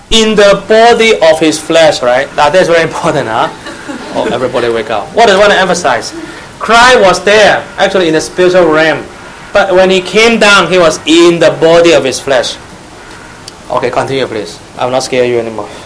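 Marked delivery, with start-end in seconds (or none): 0.1-2.0 slow, loud reading-aloud delivery. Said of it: "slowly and loudly".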